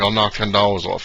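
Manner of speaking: plain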